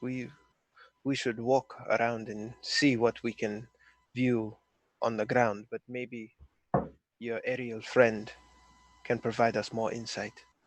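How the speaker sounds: very quiet whisper. Speaking in character, leaning in close to another character: whispering too low. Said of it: "You're whispering too low".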